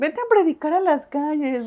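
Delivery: put-on mocking teasing. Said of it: "se burlaban mucho".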